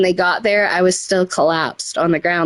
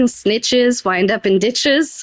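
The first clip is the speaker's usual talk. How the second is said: mock scream, small and mild, like a yell; 4 semitones higher than usual. Speaker recounting hallucinating in an ambulance, retelling own screaming. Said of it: "I kept screaming".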